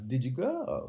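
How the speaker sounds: Russian-style questioning intonation on the word go. Speaker demonstrates how a Russian sounds asking a question: Russian question intonation. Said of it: "That's how a Russian sounds".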